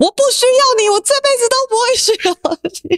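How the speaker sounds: angry, furious roar, very high-pitched. Retelling a line the eldest daughter once roared: imitating a furious roar. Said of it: "跟我怒吼过的一句话".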